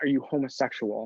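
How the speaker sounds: half-whispered, hushed, under the breath. Retelling a woman's question to you alone in a kitchen, retelling a half-whisper. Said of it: "she whispers".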